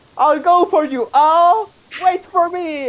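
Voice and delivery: very high, loud, desperate calling out.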